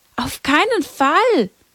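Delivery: vigorous, emphatic, energetic, pitched high. Reading Jacinta answering Lucia's question, energetically contradicting. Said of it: "widersprach Jacinta energisch".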